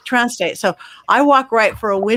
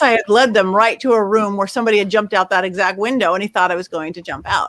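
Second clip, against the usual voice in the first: ordinary delivery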